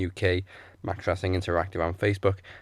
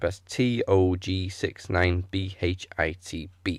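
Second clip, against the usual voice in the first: slowed-down, slow-paced delivery. Repeating a handle for listeners in case they missed it, saying it slowly. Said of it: "I'll say that slowly".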